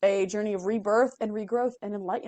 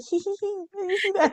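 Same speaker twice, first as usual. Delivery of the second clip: mock giggly whisper, pitched higher; 10 semitones higher than usual. Retelling leaning over to someone at the movies: imitating own giggly movie whisper. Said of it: "whisper on the".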